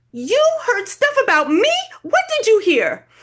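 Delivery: shrill insistent demanding. Narrating a story, voicing a character's reply: demanding. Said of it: "Maddie demands".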